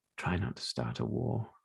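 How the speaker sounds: soft whisper, very close to the ear. Narrator voices a character speaking into the player's ear, whispering. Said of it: "she whispers in your ear".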